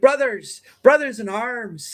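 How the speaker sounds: put-on English accent slipping into Irish. Describing an actor slipping out of his English accent, doing Michael Fassbender's Irish accent. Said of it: "switch to his Irish accent".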